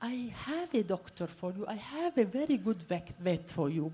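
voice dropped right down, very quiet and hushed. Retelling what his secretary said to him, retelling a lowered voice. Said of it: "why are you lowering your voice?".

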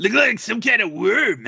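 high voice like a dying animal. Answering what the demon looked like, in an Inosuke voice. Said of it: "You sound like a dying animal".

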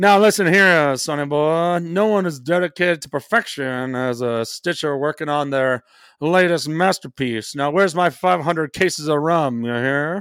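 put-on old-time gangster voice. Reading a card's flavor text as a running bit: Old Timey Gangster voice. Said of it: "We have the Old Timey Gangster".

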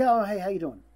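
ordinary talk, nothing marked

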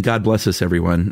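normal talking voice

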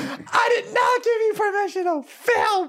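acted, very high, drawn-out, full angry meltdown. Retelling a shopper yelling at a store worker: imitating an angry outburst. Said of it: "full public meltdown".

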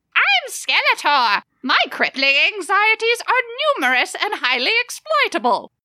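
voice lifted up very high in pitch. Mocking how the cartoon villain would really talk: Skeletor impression. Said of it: "More like".

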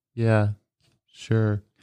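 deadpan, flat, level monotone. Speaker mocking how the other person answered questions on the podcast, imitating Raul's monotone. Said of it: "That's how monotone those fucking people are".

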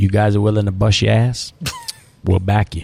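put-on swooping Louisiana Cajun accent. Retelling what the Cajun banker said after the loan meeting: Cajun accent. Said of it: "he was a little Cajun banker from Lafayette, Louisiana, low accent".

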